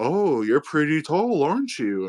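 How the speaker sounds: big comic giant voice, talking down. Retelling meeting a very tall man who remarks on his height: comic giant voice. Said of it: "making it seem like he had a comic giant voice".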